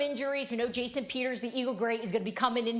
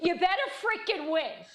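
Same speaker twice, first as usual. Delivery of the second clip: blunt New Jersey accent, pitched up; 6 semitones higher than usual. Showing how a line would be said up in Jersey: the way it's said in Jersey. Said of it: "say it the way I say it in Jersey".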